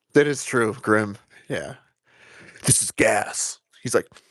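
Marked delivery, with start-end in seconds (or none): 2.6-3.6 slow, hushed, conspiratorial whisper. Mocking how a guy always whispers, imitating his hushed whisper. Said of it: "Why he always whispers like he's doing something?".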